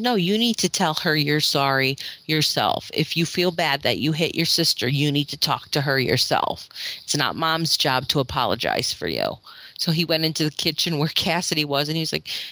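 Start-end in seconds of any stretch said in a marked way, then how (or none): none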